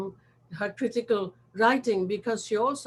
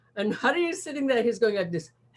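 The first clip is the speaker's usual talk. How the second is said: ordinary talk, nothing marked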